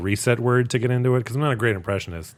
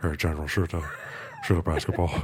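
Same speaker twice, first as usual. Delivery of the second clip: put-on deep, slightly choked voice, lower and quieter; 5 semitones lower, 6 dB quieter than usual. Imitating a commercial with basketball and a cartoon general: Shaq impression. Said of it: "My Shaq impression".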